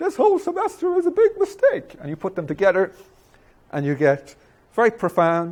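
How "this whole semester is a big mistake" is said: very high, even whinier whining voice. Acting out a second person in a whiny college bit: even whinier voice. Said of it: "even whinier voice from someone else".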